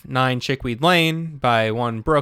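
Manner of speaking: ordinary delivery, nothing marked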